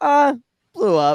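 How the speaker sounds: mock offhand, unbothered, nonchalant, pitched way up. Retelling how Anakin answers that his ship blew up: imitating Anakin nonchalantly. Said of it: "Just nonchalantly".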